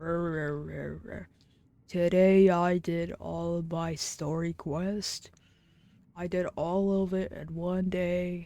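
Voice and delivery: very slow, lifeless, monotone zombie drone. Streamer showing viewers how they'll sound by the end of the stream, tired zombie voice. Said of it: "I'm gonna be sounding like a zombie".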